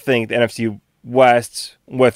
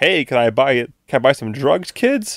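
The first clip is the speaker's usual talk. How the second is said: awkward, corny cop voice; 3 semitones higher than usual. Mocking a player as an undercover cop at a high school party: corny undercover cop voice. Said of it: "the undercover cop at, like, a high school party and goes like".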